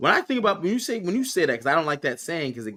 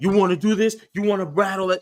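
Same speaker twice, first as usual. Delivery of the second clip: natural, angry, heated voice, pitched up; 5 semitones higher than usual. Imitating the wrestler's angry challenge after his loss: imitating someone talking mad. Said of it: "now he's talking like a normal human".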